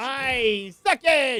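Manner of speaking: forceful and energetic. Repeating a phrase another player just said: said with vigor. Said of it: "Said that with some vigor".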